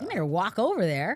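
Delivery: plain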